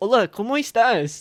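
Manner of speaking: put-on anglicized Spanish accent.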